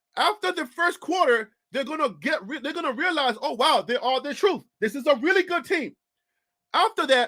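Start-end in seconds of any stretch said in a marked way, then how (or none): none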